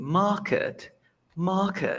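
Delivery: British accent, long a, no R. Teaching how to lengthen the vowel and drop the R, British accent. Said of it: "your British accent".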